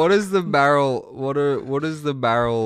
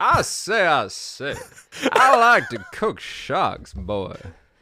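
very slow put-on Southern American drawl; 3 semitones higher than usual. Playfully putting on a voice for a joke line, Southern American accent. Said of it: "I'm just going to go southern".

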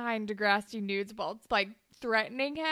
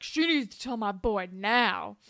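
defensive, insistent protesting tone; 2 semitones lower than usual. Retelling a scene where the character gets defensive: imitating Dallas. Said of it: "That was a great Dallas".

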